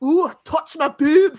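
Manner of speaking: loud, yelling put-on Scottish brogue. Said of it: "his Scottish accent".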